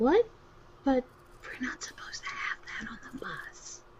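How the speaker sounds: whispered speech. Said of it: "we're whispering".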